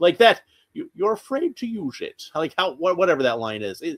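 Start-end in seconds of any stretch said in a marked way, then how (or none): 0.7-2.2 hushed, breathy, whispered movie-villain voice. Quoting a trailer line that sounds like Bane: Bane-like voice. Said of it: "it does sound a lot like Bane".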